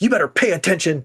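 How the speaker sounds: acted-out, loud, high-pitched yell. Retelling a character yelling at a woman, imitating someone yelling. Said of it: "He yells at her".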